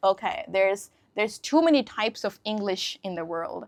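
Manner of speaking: plain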